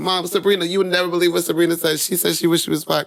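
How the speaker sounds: put-on high, fast, loud, excited child voice.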